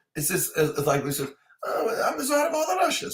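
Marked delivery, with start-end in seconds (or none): 1.7-3.2 silly voice, pitched way up high. Showing how he voices Chekov: silly Chekov voice. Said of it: "do kind of a silly".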